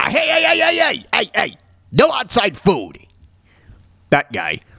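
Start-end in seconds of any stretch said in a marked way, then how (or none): 0.0-3.0 gravelly bartender voice, pitched higher. Explaining how The Simpsons bartender voice was created, doing Moe's gravelly voice. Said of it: "make him sound gravelly".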